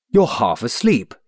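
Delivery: sternly scolding, severe tone. Cobthorn speaks to the stammering waiter, severely. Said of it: "said Cobthorn severely".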